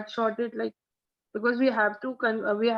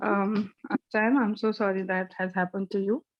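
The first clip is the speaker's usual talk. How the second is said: sincerely sorry, lower and slower; 2 semitones lower than usual. In a role-play, after coaching, apologizing to the patient sam: sincerely sorry. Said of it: "Your sorry should sound like a sorry".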